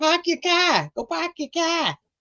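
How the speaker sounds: put-on Boston accent, very high-pitched. Imitating someone who talks like he's from boston: boston accent. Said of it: "Why do you talk like you're from there?".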